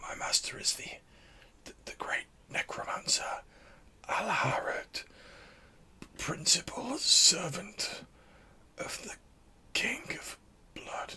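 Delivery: slow, weak, fading dying whisper, barely there. Narrating a role-play, voicing a dying man with an arrow in him, voice tailing off. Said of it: "his voice is like tailing off".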